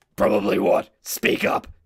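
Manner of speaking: gruff, loud, whispered growl.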